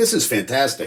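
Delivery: normal talking voice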